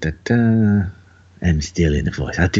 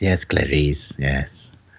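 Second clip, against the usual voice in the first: creepy, menacing villain voice; 3 semitones lower, 3 dB quieter than usual. Agreeing the new voice sounded like him, answering in a Hannibal Lecter voice. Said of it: "combination of Hannibal Lecter and Stewie".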